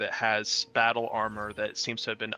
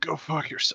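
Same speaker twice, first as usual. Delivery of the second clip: choking, barely alive-sounding, pitched up; 6 semitones higher than usual. Game master voicing a man barely alive, choking on blood, barely alive. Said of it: "He's like choking up kind of in his own blood, like he's barely alive".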